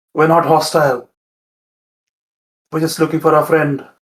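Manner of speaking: softly whispered speech. A player's character sends a message through an earring to a creature, whispering. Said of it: "And I'm gonna whisper".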